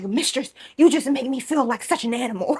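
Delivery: words growled and snorted out like an animal. Retelling what someone said while snorting and growling: imitating a growling voice. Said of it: "he's growling, and he's like".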